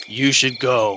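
put-on deep, low demonic voice. Retelling what a man said to a woman, in a deep, low demonic voice. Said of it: "some kind of like deep, low demonic voice".

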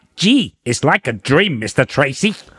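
nerdy puppet character voice. A speaker asks to do a Brains impression, then performs it. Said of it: "Can I do a brains impression?".

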